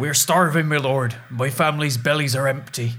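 put-on rustic peasant voice, colloquial accent. A caught thief thrown before the Duke and Duchess pleads; peasant voice, colloquial accent. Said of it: "I just like that the peasant voice".

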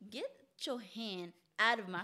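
usual speaking voice

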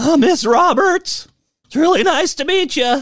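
put-on very high, gawky, awkward teenage voice. Retelling your own awkward moment meeting Miss Roberts, imitating an awkward high school freshman. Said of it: "a freshman in high school, awkwardly asking a girl to the dance".

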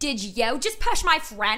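put-on a little Philly accent. Retelling a friend confronting a girl during a fight, slight philly accent. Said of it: "She has a little Philly accent. She goes".

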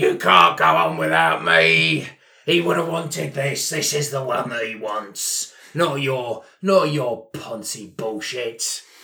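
furious, belligerent rant, slow and rising. At a funeral in a role-playing game, a stone-carving roadie: furious belligerent roadie voice.

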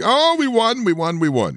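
play-acted, very high, swooping, overjoyed excited shriek. Telling how his wife came in late at night after her team won: retelling wife's excited screaming. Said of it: "comes in screaming".

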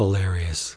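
quiet, low, deadpan delivery.

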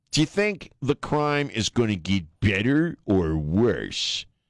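slow, mocking, over-spelled-out delivery.

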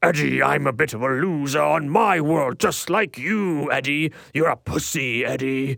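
slow, bad alien monster voice. Describing Venom's lines in a movie, the speaker does a bad Venom impression. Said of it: "my Venom impression is terrible".

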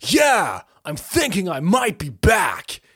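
stretched out, pitch swinging. Imitating Keanu Reeves in John Wick: imitating Keanu Reeves in John Wick. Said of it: "and he's like".

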